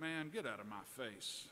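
imitated mutter under breath. Retelling a reply to a father in the bedroom: imitating a mutter under breath. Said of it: "I muttered under my breath".

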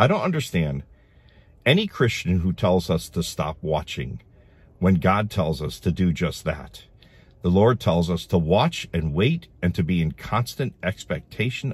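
normal talking voice

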